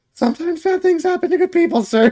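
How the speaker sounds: put-on meek voice. Trying out how a character should sound, in a put-on meek voice. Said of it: "I'm trying to do a meek voice".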